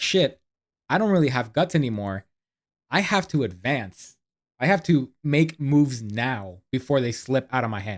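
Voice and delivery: ordinary talk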